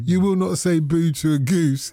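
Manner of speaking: ordinary talk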